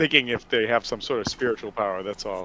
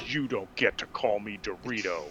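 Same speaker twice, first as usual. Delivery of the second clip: put-on angry, mad tone, quieter; 2 semitones lower, 6 dB quieter than usual. Retelling how a crew member replied to a nickname: imitating an angry coworker. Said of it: "he got real mad at me".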